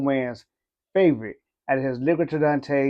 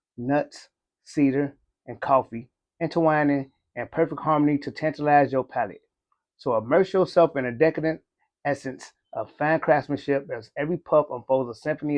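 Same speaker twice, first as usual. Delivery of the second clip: usual speaking voice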